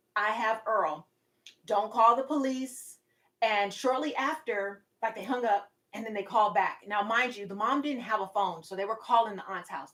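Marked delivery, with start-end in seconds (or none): 0.2-3.0 put-on deep southern drawl, slower. Retelling what the caller told the aunt, in a deep southern drawl. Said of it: "a real deep southern drawl".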